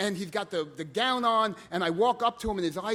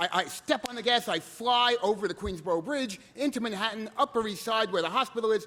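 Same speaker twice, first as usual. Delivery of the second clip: usual speaking voice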